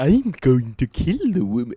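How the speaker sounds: loud, swooping, sing-song cartoon voice. Trading cartoon impressions, a Stewie voice that sounds like Bart. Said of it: "why do I sound like Bart?".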